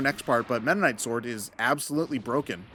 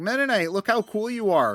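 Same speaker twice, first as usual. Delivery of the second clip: sincere, slightly higher-pitched character voice; 8 semitones higher than usual. Imagining Kirby teasing Meta Knight: Kirby voice. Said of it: "Kirby's, like, genuinely just like".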